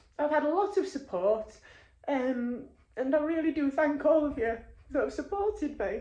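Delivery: tearful voice, crying through the words. Thanking everyone in the group who has given support, crying. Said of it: "sorry that I'm crying".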